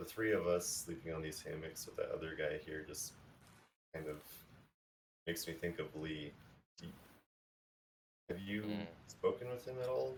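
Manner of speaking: speaking softly. Voicing a character awake at night beside a resting stranger: talking quietly. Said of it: "talking quietly".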